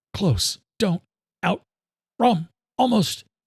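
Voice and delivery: strained, cutting in and out. Narrator reads Luke answering a woman on the phone, strained voice over phone. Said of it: "The other S U V is still following me. / strain in his voice could not be missed. / strain in his voice could not be missed. / keeping the phone to her ear".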